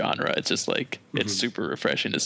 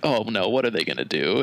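put-on cringing reaction voice. Retelling a guitarist's reaction video before a breakdown: imitating Nick Nocturnal cringing. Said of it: "he starts, like, cringing".

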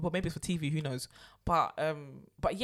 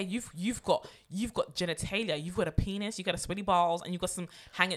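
ordinary talk, nothing marked

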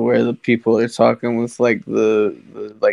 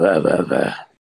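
electrolarynx robot voice, lower and faster; 6 semitones lower than usual. Retelling how a boy mimics a lady on TV, Ned from South Park voice. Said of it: "you sound like Ned from South Park".

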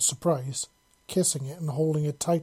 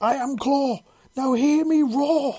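very high, drawn-out, rallying shout; 11 semitones higher, 6 dB louder than usual. Reading a story aloud, a character repeating a rallying phrase: yelling. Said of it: "Parsa yelled".

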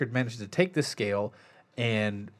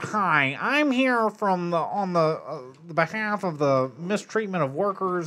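goofy nerdy put-on voice, much higher pitch; 6 semitones higher than usual. Describing a film scene, imitating Harrison Ford's goofy, nerdy voice. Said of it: "he does like a really goofy, whitey, nerdy voice".

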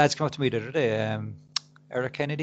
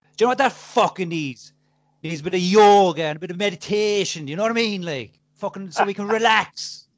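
very aggressive, loud, raised, in-your-face delivery; 5 semitones higher, 7 dB louder than usual. Retelling a man who came up about the podcast, mock-aggressive Eric Kennedy impression. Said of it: "Very aggressive".

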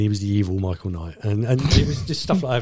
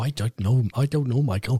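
put-on Irish-accented voice. Retelling what the talking car said to Michael: Irish-accented KITT voice. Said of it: "He's Irish now".

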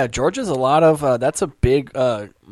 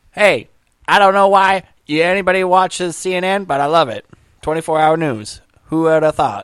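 put-on old-time, twenties-style mobster voice; 4 semitones higher, 4 dB louder than usual. Imitating a media owner, sounding like a 1920s gangster: Ted Turner impression. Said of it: "So he's always like".

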